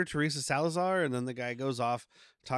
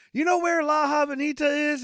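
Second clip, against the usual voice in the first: put-on yell, higher and louder; 12 semitones higher, 6 dB louder than usual. Retelling a movie scene, imitating Woody Harrelson yelling. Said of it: "leans out the window and yells".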